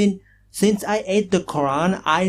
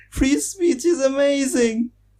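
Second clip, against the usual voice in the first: fake sobbing, higher pitch; 7 semitones higher than usual. Answering someone who asks whether you are crying: mock crying. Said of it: "are you crying?".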